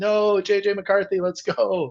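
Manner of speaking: mock very high, very slow, drawn-out scream. Retelling own reaction to a guest speaker at church: imitating own screaming. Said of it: "I'm sitting there screaming like".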